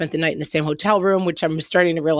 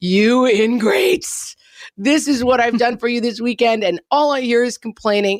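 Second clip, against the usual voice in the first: high, raging, acted-out screaming rant; 6 semitones higher, 3 dB louder than usual. Retelling how the kids were yelled at after the arcade: retelling a screaming screed. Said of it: "that kind of screaming screed of".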